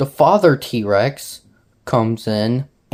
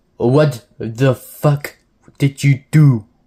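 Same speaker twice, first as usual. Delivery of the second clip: bad, clumsy, horrible put-on Russian accent; 3 dB louder than usual. Quoting the Soviet leader's reaction in a story: bad put-on Russian accent. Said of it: "That that was a that was a horrible Russian accent".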